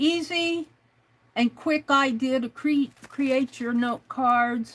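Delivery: ordinary talk, nothing marked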